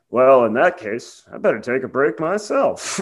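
imitated deadpan delivery. Recounting a man's reply in a story, retelling a deadpan line. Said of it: "just like deadpan".

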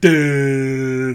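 goofy, dumbfounded cartoon voice saying "duh". Recapping a wrestling show, imitating Kaiser: dopey "duh" like SpongeBob and Patrick. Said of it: "sounds like SpongeBob and Patrick when they turn on the orb of confusion".

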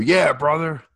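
eager, high-pitched, loud yelling. Recalling getting all geared up, the speaker is retelling a yell out the window. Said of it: "I yelled out the window".

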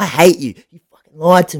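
all-out, high, shrill screamed outburst, put-on. Retelling storming back into dad's office to confront him, acting out a scream.

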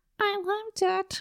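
high squeaky cartoon mouse voice.

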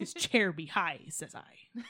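hammy put-on seafaring pirate voice. Doing an impression for the listeners, in a pirate voice. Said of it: "that was the last pirate voice I'm going to do for you".

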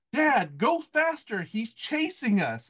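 mock, high-pitched, drawn-out screaming. Retelling how a brother screamed to their dad from the back of the van: retelling a brother's scream. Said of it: "my brother screams".

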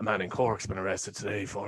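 put-on gravelly, sexy newsreader voice. Demonstrating the voice once used when trying to record, sexy news voice. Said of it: "I had my sexy news voice that I used to do".

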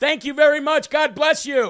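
acted, really loud, high-pitched, carrying voice. Retelling answering people who praise the hat, saying it really loud. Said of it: "Really loud".

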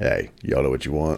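deep, low, breathy ladies' man voice.

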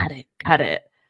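low, creepy, dropped voice. Retelling a scene, the speaker voices Gabriel urging her on, Gabriel's creepy voice. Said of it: "Gabriel's creepy voice is like".

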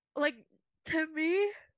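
words stretched by a yawn. Discussing similar characters, the speaker starts a point while yawning. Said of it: "sorry, I just yawned".

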